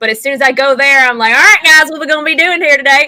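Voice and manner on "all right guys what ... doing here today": code-switched country accent, pitched higher. Retelling how speech changes when back there: code-switched country accent. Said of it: "I code switched".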